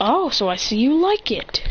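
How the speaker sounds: ordinary delivery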